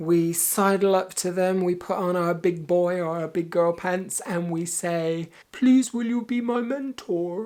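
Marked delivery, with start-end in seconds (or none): 5.5-7.5 high, sweet, pleading cartoon cat voice. A speaker explaining how to ask someone to be a mentor, Puss in Boots impression. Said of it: "That's my best Puss in Boots impression".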